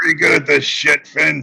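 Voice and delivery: put-on grizzled old man voice. Quoting an old guy who complimented the speaker, in a grizzled voice. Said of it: "he had a grizzled voice like this".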